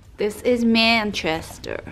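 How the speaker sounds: put-on American-accented delivery. Chatting with Alex while looking at magazines, in an American accent. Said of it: "Why do I say it in an American accent?".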